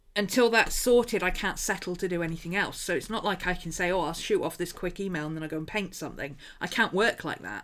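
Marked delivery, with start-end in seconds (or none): none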